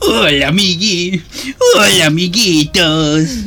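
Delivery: put-on children's TV dinosaur character voice. Two speakers recall how a bit started; one does a Barney impression.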